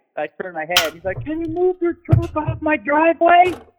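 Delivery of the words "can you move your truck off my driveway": very high, angry, forceful voice.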